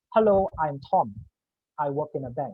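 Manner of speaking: plain speech, slight, longer pause before second sentence. A speaker demonstrating how an introvert introduces himself, longer gaps between sentences. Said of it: "they tend to have longer gaps".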